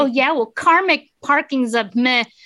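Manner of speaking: furious, loud, high-pitched yell with fumbled words. Retelling a parking spot dispute and one's own comeback: retelling an angry yell. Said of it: "I just yelled gibberish at her".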